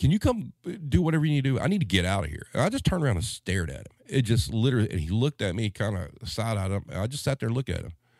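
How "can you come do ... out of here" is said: put-on older-person voice, yelling out. Retelling how an older customer at self-checkout yelled at the kid: imitating a customer yelling. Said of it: "he yelled at the kid".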